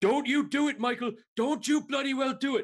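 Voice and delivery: shrieking, very high-pitched screaming. Imagining a viewer in chat protesting a generous ruling: imitating Lloyd screaming. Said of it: "he's probably screaming at me".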